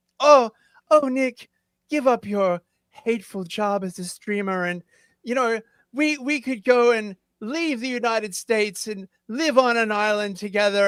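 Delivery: flirty, tempting voice. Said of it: "try and, like, honey trap him and be like".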